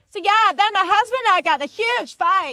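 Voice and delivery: mock high, very loud, carrying shout. Retelling an American woman at a nearby table: imitating a woman shouting. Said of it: "this bitch was shouting".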